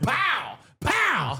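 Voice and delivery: high-pitched, loud scream. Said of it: "walk up to me and scream".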